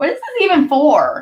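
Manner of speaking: high, play-acted bratty, obnoxious little voice. Retelling first coming across Facebook Live, in their own little obnoxious voice. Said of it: "in my little obnoxious voice".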